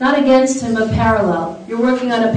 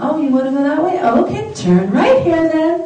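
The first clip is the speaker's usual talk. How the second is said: mock gentle, soothing voice, high, sweet and calm; 6 semitones higher than usual. Retelling how a woman redirects a man, mimicking a sweet, calm voice. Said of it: "Same sweet voice".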